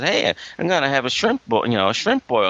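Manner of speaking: ordinary talk, nothing marked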